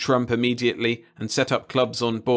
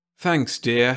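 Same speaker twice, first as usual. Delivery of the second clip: thoughtful, musing. Narrator reads a character's line after a scuffle, thoughtful. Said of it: "Max said thoughtfully".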